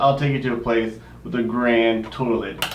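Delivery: normal talking voice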